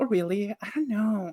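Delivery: play-acted coy, demure, falsely modest tone. Speaker retells how a friend reacted to the group's praise: imitating coy false modesty. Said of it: "they'd be like".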